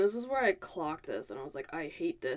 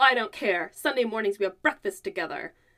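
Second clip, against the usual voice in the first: put-on nasty voice. Retelling a parent ordering a sleeping kid out of bed, imitating a nasty voice. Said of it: "a really, like, nasty voice".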